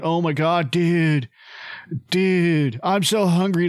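put-on stoned hippie dude voice. Retelling how a movie character talked: stoned hippie Grunge voice. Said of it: "So pretend he's stoned".

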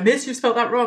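smug, pleased-with-itself, know-it-all schoolkid voice. Teacher retelling a pupil pointing out her spelling mistake, imitating a smug kid. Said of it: "one of the kids will like smugly go".

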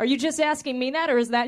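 normal talking voice

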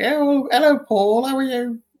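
very high-pitched little put-on elf voice. Playing an elf and greeting the host, in an elf voice. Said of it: "I don't know what an elf's voice would be like".

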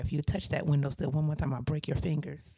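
hushed, menacing, threatening whisper. Retelling leaning up to whisper a threat in a girl's ear: retelling own whisper. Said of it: "lean up and whisper in her ear".

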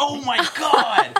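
high, loud, laughing, stunned disbelief.

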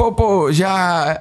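tongue-tied stammering, stuck on the words. Retelling meeting the film's cast at an interview, retelling his own stammering. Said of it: "Gaguejando, né?".

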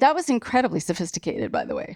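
usual speaking voice

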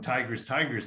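ordinary delivery

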